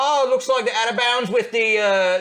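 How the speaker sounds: high, loud, bad Cockney announcer accent.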